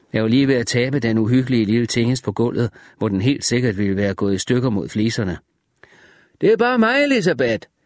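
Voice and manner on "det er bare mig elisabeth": loud, high-pitched shout. The narrator calls out to someone in the house, shouting. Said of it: "råbte jeg".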